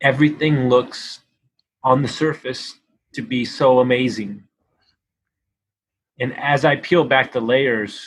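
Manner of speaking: slow, choked-up speech, voice catching with emotion. Speaker talking about their own childhood, choked up with emotion. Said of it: "I'm sorry, I'm getting emotional".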